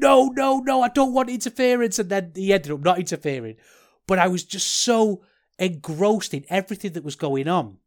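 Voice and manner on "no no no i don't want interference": put-on, loud, high protesting shout. Speaker recalls shouting at the tv during a match: retelling own shout at the tv. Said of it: "And I'm shouting".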